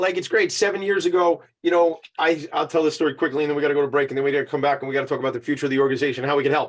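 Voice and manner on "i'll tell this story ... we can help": fast, rushed, disclaimer-style rattle like ad fine print. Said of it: "I sound like the guy on the commercials".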